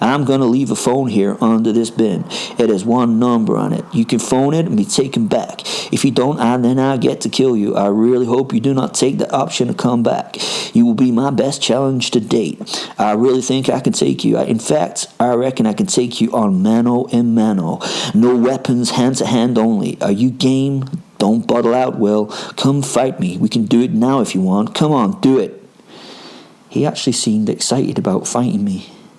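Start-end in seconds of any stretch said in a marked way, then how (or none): 0.0-25.6 attempted put-on American accent. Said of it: "I'm gonna attempt an American accent".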